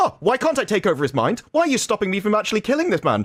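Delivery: play-acted happy sing-song. Retelling a creepy scene with Cortana: imitating a really happy tone. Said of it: "she's saying it in this really happy tone of voice".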